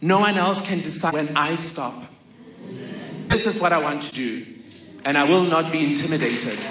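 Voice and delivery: quavering, trembling, unsteady voice. Retelling the mother's reply to worried children: imitating a shaky voice. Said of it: "with a shaky voice".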